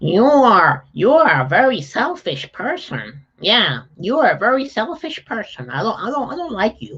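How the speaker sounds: high, swinging, quacking voice. Explaining an exercise, showing how a person talking back would sound: Donald Duck voice. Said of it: "add uh, Donald Duck's voice".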